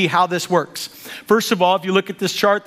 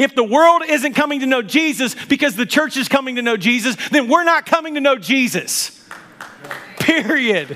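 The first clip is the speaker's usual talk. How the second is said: high-pitched, mild, declaiming half yell; 5 semitones higher than usual. A speaker addressing a church congregation, yelling. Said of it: "I'm yelling".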